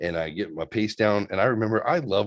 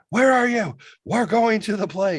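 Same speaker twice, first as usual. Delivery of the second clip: very high, shrill, loud screaming; 13 semitones higher, 5 dB louder than usual. Retelling a phone call where mom was angry: imitating mom screaming. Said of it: "mom's screaming at me".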